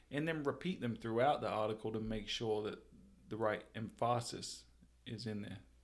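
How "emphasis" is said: wrong syllable stressed for emphasis. Talking about repeating big takeaways in an article, misplaced stress in emphasis. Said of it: "I changed the emphasis. The wrong syllable".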